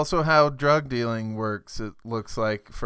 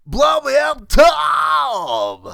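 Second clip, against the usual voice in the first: loud, high-pitched, drawn-out shout; 11 dB louder than usual. Showing another speaker what the shock jock sounds like: Tom Likas impression. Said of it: "He's like, kinda like that".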